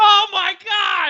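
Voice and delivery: mock very high ordinary-guy scream. Speaker describes fake game-reaction montages to friends; normal guy yelling. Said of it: "just a normal dude's voice yelling".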